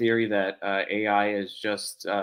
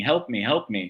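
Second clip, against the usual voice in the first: normal talking voice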